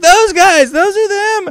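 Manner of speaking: very high, very loud, shrill screaming screech. Retelling the woman screaming from a stretcher: imitating a woman screaming. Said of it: "She's still screaming".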